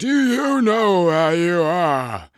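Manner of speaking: very high, very loud, booming wizard voice. Showing off voices into the microphone, the speaker tries a loud hinting wizard voice. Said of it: "louder and more hinting like a wizard voice".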